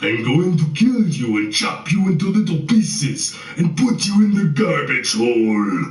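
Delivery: phony stretched monster voice. Taunting the listeners he has fooled, in a phony monster voice. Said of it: "In a phony monster voice".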